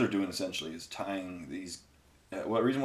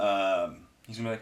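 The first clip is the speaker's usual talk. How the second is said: plain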